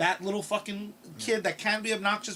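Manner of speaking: ordinary delivery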